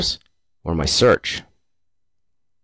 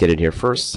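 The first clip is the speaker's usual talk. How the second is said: plain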